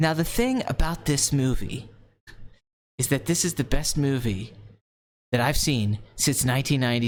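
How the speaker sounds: put-on, really serious voice. Imitating Tarantino judging a movie: really serious Quentin Tarantino impression. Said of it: "get really serious".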